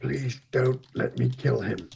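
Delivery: soft, hushed half-whisper under the breath. Turning away from a table to plead with companions: half-whispering. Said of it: "I'm gonna whisper to Hammond and to Newman".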